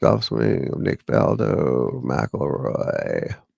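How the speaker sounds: low, creaky vocal fry in the throat.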